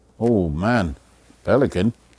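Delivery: ordinary talk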